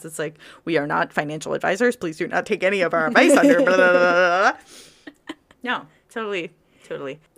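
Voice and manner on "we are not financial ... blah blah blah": loud, fast announcer voice. Joking about adding a legal disclaimer: fast-talking announcer voice. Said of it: "the announcer guy who talks really fast".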